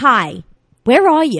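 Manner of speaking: very slow, drawn-out delivery. Telling a co-host about their mom's voicemails, imitating their mom. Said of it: "that's a really good impression of your mom".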